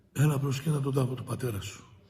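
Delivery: ordinary talk, nothing marked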